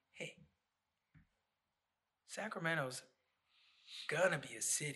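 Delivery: plain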